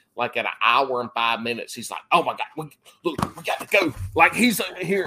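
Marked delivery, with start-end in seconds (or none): 2.1-4.0 put-on high, worked-up, full-on impatient conniption fit. Imitating Alex urging to end the podcast: imitating Alex having a conniption fit. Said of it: "he would be having conniption fits".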